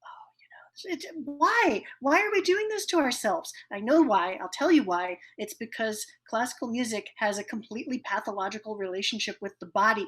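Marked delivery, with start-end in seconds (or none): 0.0-3.5 put-on whisper, higher pitch. Acting out a concert audience during a pause: imitating whispering.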